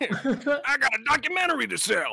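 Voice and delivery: very high, cartoonish voice. Trying the line again after another's failed attempt, in a Bubs from Homestar Runner voice. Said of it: "That's a little closer".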